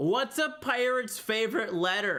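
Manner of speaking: acted-out loud shout. Recounting a guy calling across the bay after lights out, retelling a yell. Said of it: "on the opposite side of the bay of me yelled".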